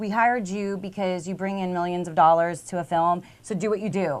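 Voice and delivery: ordinary talk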